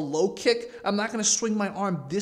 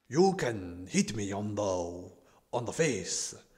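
bad fake Japanese accent, much lower, quieter; 10 semitones lower, 4 dB quieter than usual. Commenting on a Taekwondo bout, voicing a fighter in a bad Japanese accent. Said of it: "Bad Japanese accent".

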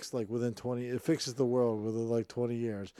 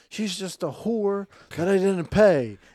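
very loud, shrill screaming outburst; 8 semitones higher, 9 dB louder than usual. Pitching a movie scene, the character in court: screaming in court. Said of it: "he screams something like".

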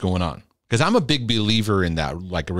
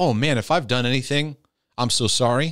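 ordinary talk, nothing marked

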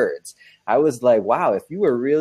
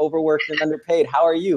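put-on cheerful smiling voice, higher, faster; 4 semitones higher than usual. Retelling a woman's reply in an elevator, imitating her big smile. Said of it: "With a big smile".

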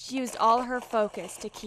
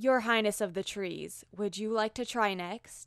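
usual speaking voice

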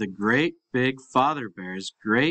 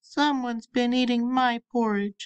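put-on tiny, wee, very high baby bear voice; 12 semitones higher than usual. Narrator reading the story aloud, voicing the wee small baby bear: wee small voice. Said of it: "cried the wee small bear in his wee small voice".

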